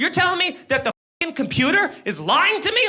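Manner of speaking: high-pitched, screaming, disbelieving voice. Speaker retells a man questioning him about a missed court date: retelling someone screaming. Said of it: "he starts screaming at me".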